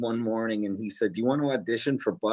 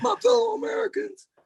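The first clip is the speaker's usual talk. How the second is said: hoarse, raspy, very high-pitched voice. Joking about coming home hoarse after recording: Bill Clinton voice. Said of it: "I sounded like Bill Clinton used to sound".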